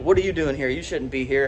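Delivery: ordinary delivery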